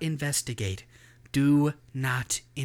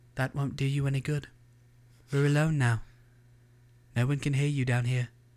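put-on same British-accented voice throughout. Reading a story aloud, a voice speaks to the janitor; British voice. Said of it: "The same British voice from before".

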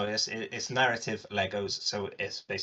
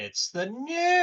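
raised voice, pushed very high-pitched; 5 dB louder than usual. Joking around, the speaker says this in a very high-pitched voice. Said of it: "it went high enough that it cut off".

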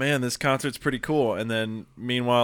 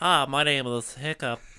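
put-on little boy voice, pitched higher; 4 semitones higher than usual. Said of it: "he was playing a little boy and his voice made sense".

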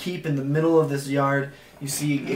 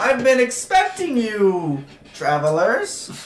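booming, loud, swooping character yell; 7 semitones higher, 5 dB louder than usual. Voicing a seated figure greeting the approaching travelers: yelling in character. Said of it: "he yells out".

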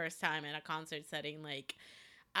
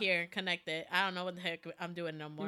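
ordinary talk, nothing marked

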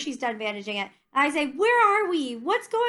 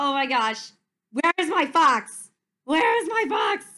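worked-up, frantic, agitated, panicky fretting. Describing their own reaction whenever he says fox: acting out getting agitated. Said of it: "I get really agitated like".

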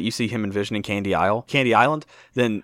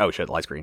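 easygoing, offhand, unhurried casual tone; 6 semitones lower, 3 dB quieter than usual. Retelling noticing a green light at an intersection: acting out a casual reaction. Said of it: "like that. Just, like, no big deal".

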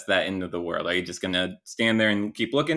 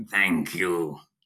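small creature voice, lower pitch; 4 semitones lower than usual. Voicing a small creature that suddenly speaks: small creature voice. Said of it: "the creature speaks".

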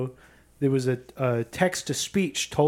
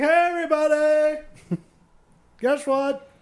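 very high, drawn-out, acted town crier yell; 13 semitones higher, 3 dB louder than usual. Acting out a town crier announcing news: town crier yell. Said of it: "they just yell".

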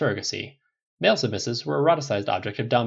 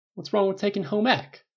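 slightly defiant, pitched-up comeback tone; 9 semitones higher than usual. Rogers answers Tony after Tony repeats his words incredulously; a trifle defiant. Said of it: "Rogers asked a trifle defiantly".

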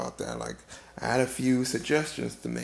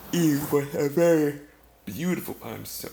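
talking mid-yawn, higher and louder; 2 semitones higher, 6 dB louder than usual. Telling of finding Eve on a little tour, the speaker is yawning while talking. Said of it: "I'm yawning so much".

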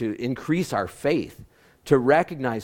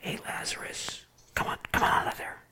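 whispered out of the corner of the mouth. Imagining Jesus at Lazarus's tomb calling him out, whispered out of side of mouth. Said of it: "whispered out of the side of his mouth".

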